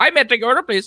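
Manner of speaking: put-on full-on high-pitched Indian accent. Imitating an order-taker greeting a customer, in a full-on indian tech-support accent. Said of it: "come full on Indian I T tech support".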